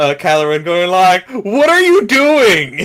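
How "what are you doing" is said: high, loud, slow, drawn-out ghostly scolding. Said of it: "have him scold".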